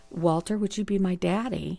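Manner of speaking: put-on quiet whisper. Retelling a childhood question asked on his lap: imitating a quiet whisper. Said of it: "I very quietly whispered to him".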